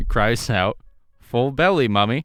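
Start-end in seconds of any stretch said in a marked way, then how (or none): 1.2-2.2 put-on British accent. Retelling what the tilbury cries at its creator's window, tilbury's british accent. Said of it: "it has a British accent".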